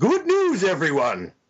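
high-pitched, screamed, yelled-out professor character voice. Reacting to news of a game reprint, screaming in the professor's voice. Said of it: "scream in the professor's voice".

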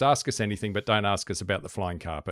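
ordinary talk, nothing marked

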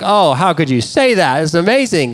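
sarcastic, snarky, dripping with sarcasm. Retelling a marriage argument with his wife: imitating own sarcastic remarks. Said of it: "very sarcastic, snarky comments".

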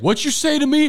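put-on high, loud shout like a kid.

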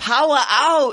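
attempted Australian accent. Told to say it with an Australian accent, attempt an Australian accent. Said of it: "You have to say it with Australian accent".

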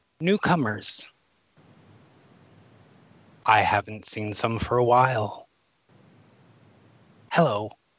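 hollow, empty-sounding, rasping voice. Voicing Del as she drifts up and greets the group: Del's hollow raspy voice. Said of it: "a sort of almost sort of a hollow, raspy sound".

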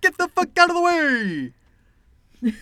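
put-on Brooklyn accent, very high. Quoting the man they've been imitating and laughing at, deliver a Brooklyn accent impression. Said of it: "what a Brooklyn accent sounded like".

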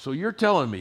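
put-on sarcastic tone. Retelling a challenging question about a pilot father: imitating a sarcastic tone. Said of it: "she was a little sarcastic at this point".

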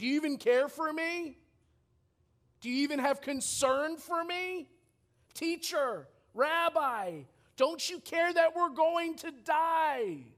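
high-pitched sarcastic accusing cry. Retelling the disciples waking Jesus in the storm: imitating a sarcastic cry for help. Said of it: "a sarcastic, rhetorical question, pretty much crying out for help".

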